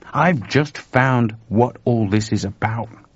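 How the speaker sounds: ordinary delivery, nothing marked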